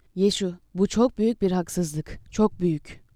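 usual speaking voice

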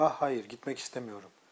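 plain

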